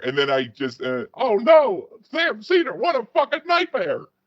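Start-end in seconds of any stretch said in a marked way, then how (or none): 1.1-4.0 very high, squeaky, high-pitched cry. Explaining that a phrase always comes out as an impression: Steven Crowder impression. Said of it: "hear myself saying it all the time".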